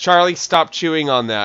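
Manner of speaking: loud, high-pitched, scolding yell. Telling a cat to stop chewing a cord: yelling at the cat. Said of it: "I had to yell at my cat".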